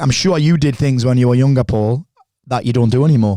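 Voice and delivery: ordinary talk, nothing marked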